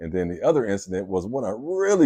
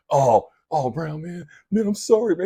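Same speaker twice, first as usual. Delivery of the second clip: mock weepy, tearful voice, crying through tears; 8 semitones higher than usual. Retelling an apology from someone in full tears: imitating someone crying. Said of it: "He's like full tears".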